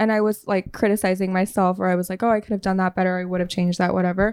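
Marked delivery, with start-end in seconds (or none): none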